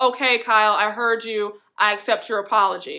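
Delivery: put-on nasty, curt voice. Retelling a second reply to an apology: imitating Cynthia's nasty tone. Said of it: "Cynthia is just as nasty".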